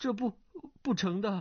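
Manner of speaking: quavering, frightened, high and trembling. Narrator reading a character refusing a proposed double suicide, in a trembling voice. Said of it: "颤声道".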